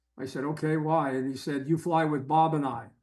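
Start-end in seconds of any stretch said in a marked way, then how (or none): 1.7-2.8 mock, fake broken English. Telling a story about a teammate's request, doing his speech as an impression. Imitating broken English. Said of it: "in his broken English".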